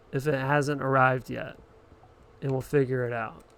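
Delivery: normal talking voice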